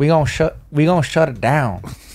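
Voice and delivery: put-on country accent. Speaker tries out the voice to bring on a trip to Texas, country voice. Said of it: "We we country voices".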